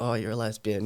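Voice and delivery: put-on teasing tone. Retelling a dad's joke after the coming out: imitating dad's teasing. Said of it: "My dad started taking the piss".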